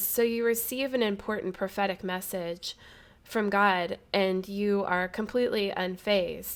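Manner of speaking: usual speaking voice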